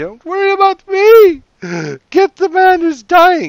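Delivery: piercing, shrill, very high, very loud swooping scream. Game master voices a lady being escorted up, screaming. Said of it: "who's screaming".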